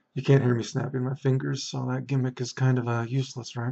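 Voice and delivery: whispering. A speaker recording for listeners, whispering. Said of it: "because I'm whispering".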